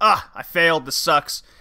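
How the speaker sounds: mocking put-on defeated-villain lamenting voice. Retelling the villain's defeat, imitating the director. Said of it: "and then he says some lines of".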